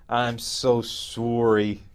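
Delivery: very slow, drawn-out delivery. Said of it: "he just grabs her by the hand and goes".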